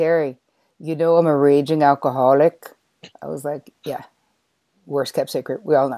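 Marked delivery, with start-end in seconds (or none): 0.0-2.7 bad fake Irish brogue, slow and loud. Retelling a man's message to terri, in his terrible irish accent. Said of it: "I'll do my terrible one".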